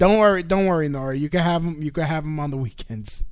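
plain

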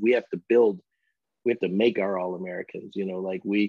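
normal talking voice

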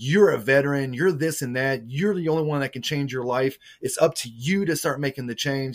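put-on yelling. Retelling how a man yelled at the speaker, who was crying, retelling a yell. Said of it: "He's like yelling at me".

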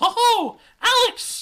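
put-on young girl voice, very high and very loud. Narrating a story, voicing a young girl calling out to the main character; young girl voice. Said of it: "need a voice for this young girl".

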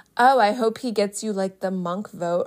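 ordinary talk, nothing marked

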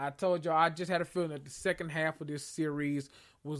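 ordinary delivery

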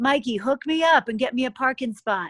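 put-on well-done New England Boston accent. Speaker retelling what Chris said on her way in before the marathon, imitating Chris's Boston accent. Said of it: "in a good Boston, you know, New England accent".

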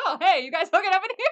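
loud, high-pitched, laughing, nonchalant delivery.

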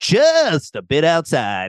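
put-on American accent with swooping intonation. Quoting a line from the movie Major League, in a put-on American accent. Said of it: "he says it in an in an American accent".

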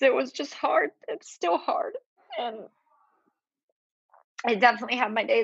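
weeping, tearful, crying through the words. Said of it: "i'm sorry i'm crying on your Podcast".

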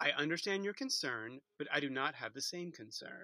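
play-acted perfectly calm, self-assured, low and soft. Speaker quotes what Gigi said to Rue, mimicking Gigi's calm, assured voice. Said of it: "in this perfectly calm, assured voice".

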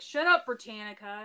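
mock joking, playful teasing tone. Retelling what someone jokingly said to them, quote it jokingly. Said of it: "Marissa jokingly was like".

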